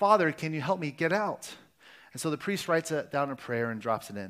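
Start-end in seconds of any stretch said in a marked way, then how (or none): none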